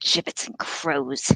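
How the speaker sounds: hissed in a breathy, snake-like whisper. A narrator reads a man's outburst as he leans toward the king, hissed. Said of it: "he hissed".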